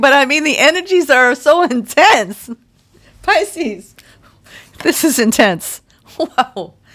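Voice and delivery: talking through laughter. Speaking to Pisces about their energies, laughing while talking. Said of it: "I'm sorry I'm laughing".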